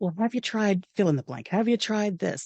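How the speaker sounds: super calm, even and easy, quick delivery. Retelling how the husband suggested fixes during tech difficulties: imitating husband's super calm voice. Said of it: "my husband was in his super calm voice".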